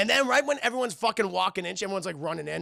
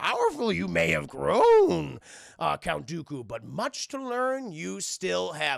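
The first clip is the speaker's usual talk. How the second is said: slow delivery, one word at a time. Retelling a film duel, voicing Yoda speaking to Count Dooku: Yoda voice. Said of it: "And he's just like".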